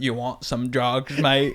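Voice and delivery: poor imitated Australian accent. Retelling a friend's drug dealer scene in a bad Australian accent. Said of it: "a day to learn Australian accent".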